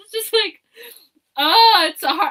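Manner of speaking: laughing through words. Admitting embarrassing past behaviour to viewers, laughing while talking. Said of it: "I'm not laughing 'cause this is funny".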